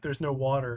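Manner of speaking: ordinary talk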